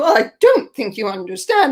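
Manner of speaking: huffy, put-out, indignant tone. Retelling the curator's reply to a critical review: imitating a huffy curator. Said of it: "gets all huffy".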